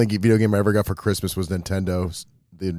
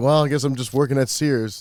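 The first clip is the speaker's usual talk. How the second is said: ordinary talk, nothing marked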